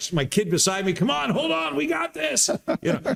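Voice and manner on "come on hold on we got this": put-on very high, raspy, rough shriek. Retelling cheering on a kid beside him in a capsule: retelling a scream. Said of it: "I'm screaming at my".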